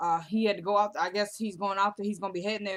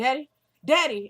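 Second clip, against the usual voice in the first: put-on high, loud little boy voice with Southern accent; 5 semitones higher, 6 dB louder than usual. Telling a story, the speaker voices Brody running out of the bathroom: little southern accent. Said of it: "the little southern accent".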